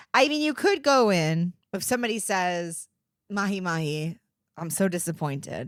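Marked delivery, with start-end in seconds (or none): 3.3-5.7 mock dramatic disappointment, lower and quieter. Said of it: "the drama of being very disappointed".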